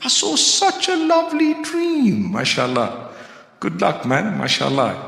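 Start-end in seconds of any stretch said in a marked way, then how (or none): 0.0-2.3 mock naive voice, much higher pitch. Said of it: "people to this day who really believe that".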